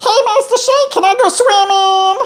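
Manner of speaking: very high-pitched cartoon character voice. Trying out a cartoon voice for the others: Meatwad voice. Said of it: "We're gonna try my best meat wad".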